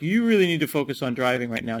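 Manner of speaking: ordinary talk, nothing marked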